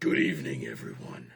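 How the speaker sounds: very low, deep, rasping caped-hero voice. Narrating a host greeting a crowd over a microphone, Batman voice. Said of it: "That's the best Batman I can do".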